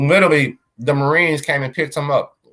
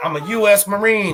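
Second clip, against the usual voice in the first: mock man yelling, much higher, slower; 7 semitones higher than usual. Describing a man who was going crazy, the speaker acts out him imitating a man yelling. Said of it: "he kept yelling out".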